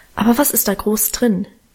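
ordinary delivery

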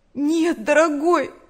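high, loud, quavering, trembling voice. As a red wall of sand approaches, Nancy answers Bill in a trembling voice. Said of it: "дрожащим голосом сказала Нэнси".

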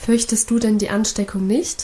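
ordinary delivery

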